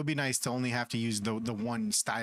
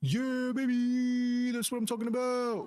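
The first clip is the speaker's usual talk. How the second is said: put-on excited cheer voice, pitched higher; 13 semitones higher than usual. Celebrating a win in the game, doing a Charlie impersonation. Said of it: "Gotta do my Charlie impersonation".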